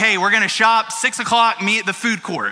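ordinary talk, nothing marked

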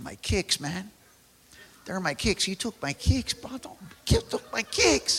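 put-on Spanish accent. Retelling what a guy said after someone took his shoes, imitating a Spanish accent. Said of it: "get my Spanish accent".

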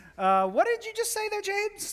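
very high, wide, incredulous voice.

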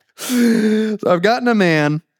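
high, slow, giggly delivery. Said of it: "Sorry, I'm giggling now".

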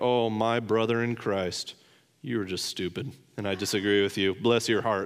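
mock sarcastic tone. Showing how a cynical listener might hear the word brothers: mock sarcastic tone. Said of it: "there's a way to use that sarcastically".

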